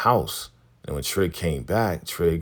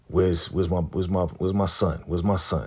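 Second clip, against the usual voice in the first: usual speaking voice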